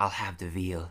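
low, hushed, secretive half-whisper. Describing a clip where a character half-whispers an order to a waiter; half-whispering. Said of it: "Just like whispers to a waiter".

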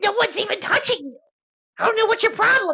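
tiny, very high, squeaky little goblin voice. Voicing a little goblin bystander answering a player: little goblin character voice. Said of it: "looks at you and is like".

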